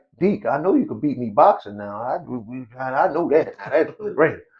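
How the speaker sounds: words broken up by laughter while talking. Retelling a brother's laughing reply to a basketball challenge: imitating Frank laughing while talking. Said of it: "my brother looked at me and laughed, like".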